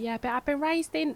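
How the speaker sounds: imitated Cockney accent. Retelling what a Somali woman at a talk said: imitating a Cockney accent. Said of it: "a Somali woman with a Cockney accent".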